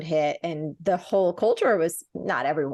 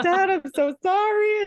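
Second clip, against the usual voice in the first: blubbering sob-talk, very high and drawn-out, ugly crying; 14 semitones higher, 3 dB louder than usual. Retelling a tearful apology on a call to dad: imitating own ugly crying. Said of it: "I'm doing the ugly cry".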